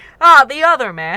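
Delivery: very loud, high, scornful sneer. Reading a story line where one man echoes another's words, sneering. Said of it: "in a sneering voice".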